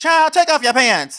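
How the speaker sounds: put-on loud high grandma voice. Joking with a co-host about a leaked audio, the speaker tries a Madea impersonation. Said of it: "do like a Madea impersonation".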